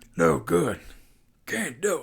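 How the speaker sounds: slow, drawn-out, rough and creaky voice. Quoting what the game character says when shooting fails: Snake impression. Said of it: "That was pretty good".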